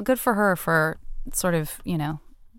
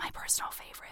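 barely audible, very quiet, hushed whisper. Explaining a library reading app to listeners, whispering. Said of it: "I don't know why I'm whispering".

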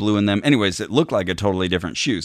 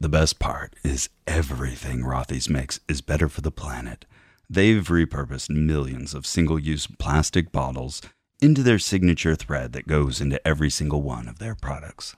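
put-on deep voice, lower; 5 semitones lower, 3 dB quieter than usual. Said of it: "but then yours was lower".

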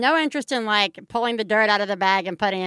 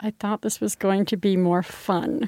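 utterly forlorn, sorrowful voice, acted out, saddest possible. Retelling what a woman said as she went into the house looking sad, imitating the saddest voice ever. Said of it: "in, like, the saddest voice ever".

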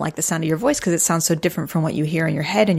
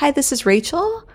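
uptalk, phrase end lifts up; 10 semitones higher than usual. Showing her own uptalk on a voicemail greeting: uptalk, rising phrase ends. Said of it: "Have you heard of up-talking? I feel like sometimes I'll do that, especially on like a voicemail message".

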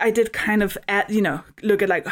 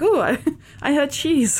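pitched-up, perked-up talking dog voice; 5 semitones higher than usual. Voicing the dog appearing when cheese is out: voicing the dog hearing cheese. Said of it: "a dog head being like".

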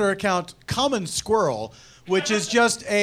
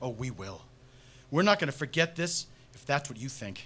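dramatic reading voice, lower and quieter; 7 semitones lower, 10 dB quieter than usual. Reading a scene from a summer film aloud with others: dramatic reading. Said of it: "we're doing a dramatic reading".

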